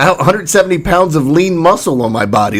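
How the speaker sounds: ordinary delivery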